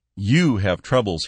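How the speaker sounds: jeering, mocking, taunting, stressing 'you'. A man taunts his father-in-law, jeering, stressing 'you'. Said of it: "he jeered".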